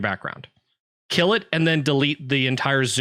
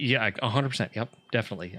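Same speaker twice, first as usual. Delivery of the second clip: sarcastic, ironic tone; 3 semitones lower, 6 dB quieter than usual. Answering another speaker's claim that the code was checked: sarcastic. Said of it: "I'm being sarcastic".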